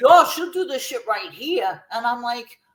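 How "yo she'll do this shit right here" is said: put-on Puerto Rican Bronx New York street accent. Retelling a story, the speaker quotes JC in her Puerto Rican Bronx accent. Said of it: "her Puerto Rican Bronx accent".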